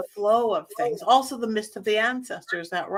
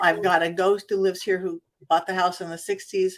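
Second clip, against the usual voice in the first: ordinary delivery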